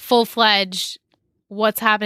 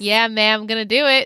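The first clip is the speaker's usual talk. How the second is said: put-on smiling voice. Imitating how Jason says everything with a smile: imitating Jason, smiling while talking. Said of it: "he says everything with a smile".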